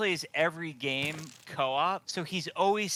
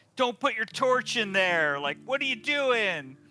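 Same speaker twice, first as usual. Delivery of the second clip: high-pitched yelling; 6 semitones higher, 3 dB louder than usual. Retelling yelling at somebody who joins in the game: imitating own yelling. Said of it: "yelling at 'em".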